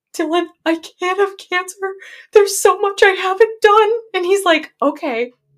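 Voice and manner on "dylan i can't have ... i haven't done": put-on crying, high sobbing voice through the words. Retelling what you said to your older brother, imitating your own past sobbing. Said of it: "And I'm sobbing".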